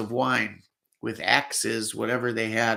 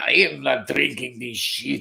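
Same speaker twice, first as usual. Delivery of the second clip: put-on Swiss accent laid on thick and heavy. Retelling what a man said about the wine: heavy thick Swiss accent. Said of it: "in that heavy, thick Swiss accent".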